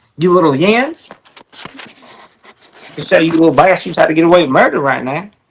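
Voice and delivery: put-on heavy country accent. Someone voices Kohberger, a country-accent Kohberger impression. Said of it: "using a country accent to do it".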